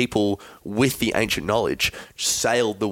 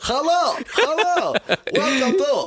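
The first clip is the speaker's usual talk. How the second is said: very high, very slow, drawn-out comic voice. Joking about ancient Egyptian radio: Borat voice. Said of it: "I think that was more Borat".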